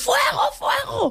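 high, slow stretched-out shout.

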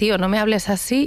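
ordinary talk

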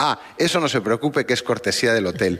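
ordinary talk, nothing marked

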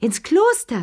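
high, screeching, scandalized, shrieking outcry. Charlotte Pelou reacts to a duke's son's words, shrieking. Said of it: "kreischte Charlotte Pelou".

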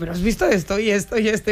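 ordinary delivery

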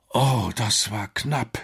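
groaning, out of breath. Narrator reading Alex back aboard the submarine after an escape: groaning, out of breath. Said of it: "stöhnte Alex außer Atem".

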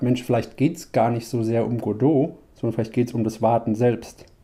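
ordinary delivery

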